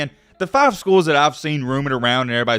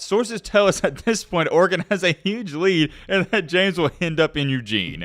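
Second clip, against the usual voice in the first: words spoken through laughter; 3 semitones higher than usual. Reading a quoted sports report aloud to viewers, laughing while reading. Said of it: "I'm sorry I'm laughing".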